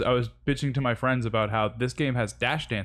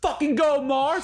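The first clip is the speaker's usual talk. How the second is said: put-on shrill, very high, full-throated screaming cheer; 4 dB louder than usual. Recounting cheering from the crowd for someone they knew on stage, retelling screaming. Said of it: "we just started like screaming like".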